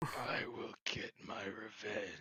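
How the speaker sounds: put-on demonic voice, hushed. Storyteller voicing Trigara as the veil falls back, demonic voice. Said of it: "in his demonic voice".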